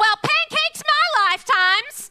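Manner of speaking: put-on very high, loud, heavily laid-on Southern accent. Listing top quotes from the show: Reba southern accent. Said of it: "so that southern accent".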